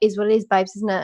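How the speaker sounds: put-on British accent, reality-show style. Quoting the cast of Love Island: imitating Love Island cast. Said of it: "all of them were just like".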